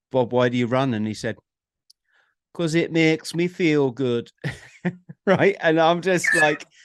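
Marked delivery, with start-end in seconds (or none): 2.5-4.3 rough, put-on Birmingham (Brummie) accent. Speaker quotes a runner explaining why he runs, in a put-on Brummie accent. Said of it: "I didn't realize he was from Scotland".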